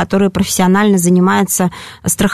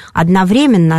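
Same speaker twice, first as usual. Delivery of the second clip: stress on the syllable вре in одновременно. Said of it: "составители словарей дают оба варианта".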